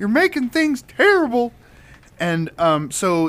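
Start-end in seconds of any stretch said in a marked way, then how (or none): 0.0-1.5 put-on shrill, loud, very high Southern accent. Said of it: "a southern accent".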